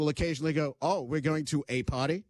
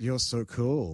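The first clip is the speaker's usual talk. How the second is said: mocking sarcasm, lower pitch; 4 semitones lower than usual. Answering a partying story, sarcastic disdain. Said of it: "treating it with a level of disdain and sarcasm".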